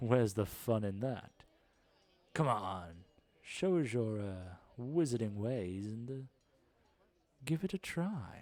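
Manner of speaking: very soft-spoken, effortless, unhurried, quiet murmur. A man urging competitors to give it a try, speaking very quietly. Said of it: "he's kind of talking very quietly".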